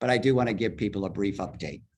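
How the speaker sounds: very fast, hurried delivery. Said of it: "I feel like I'm talking very fast".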